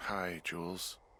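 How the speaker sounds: weary, tired voice. Woken and picking up the radio, the speaker greets the caller in a tired voice. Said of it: "you sound tired".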